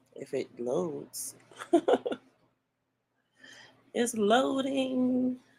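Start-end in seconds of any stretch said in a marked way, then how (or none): 3.9-5.4 high, slow narrator voice. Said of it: "trying to read in the narrator's voice".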